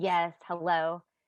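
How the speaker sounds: put-on irritable, short-tempered, cranky voice. Retelling answering an unknown caller on the phone, in a put-on cranky voice. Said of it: "I put on my kinda cranky voice".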